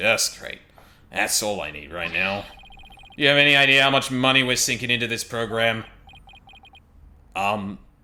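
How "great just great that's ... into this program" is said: sleazy movie producer character voice. Voicing a game character hearing about an accident: sleazy movie producer voice. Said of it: "this guy's character is sleazy movie producer".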